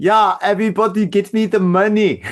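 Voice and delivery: put-on German-accented speech. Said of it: "like, a German accent?".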